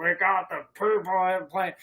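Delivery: gruff football announcer voice. Predicting a low-scoring football game, the speaker slips into a gruff Madden voice. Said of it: "like that kind of gruff voice".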